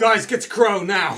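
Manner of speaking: very loud, high-pitched, exasperated fed-up yell. Cass calls to the group, Cass's exasperated voice. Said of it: "in his exasperated voice that he always does".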